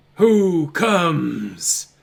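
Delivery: big booming distant call, drawn-out "comes". Narrating a scene, voicing the figure whose head turns toward the players: deep voice. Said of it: "you hear this deep voice".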